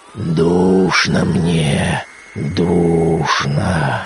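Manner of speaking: very low, wild, unearthly groaning voice. Reading a dead man rising from his grave; wild, inhuman moan. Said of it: "простонал он диким, нечеловечьим голосом".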